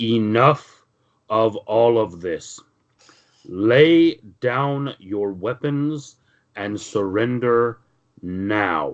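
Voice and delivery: very imposing, commanding voice, drawn out. Game narrator voices a figure calling out from the stairway, very imposing voice. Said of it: "a very imposing sounding voice from the stairway".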